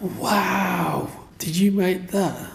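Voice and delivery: put-on high, slow, awed little girl voice.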